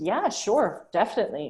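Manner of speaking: emphatic, wholehearted, strongly committed yes. Showing one way someone might respond when asked something: emphatic. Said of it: "an emphatic".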